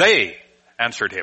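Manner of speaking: first word "they" strongly stressed. Showing how readers tend to say the sentence, stress on 'they'. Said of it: "We put the emphasis on the first word in the sentence".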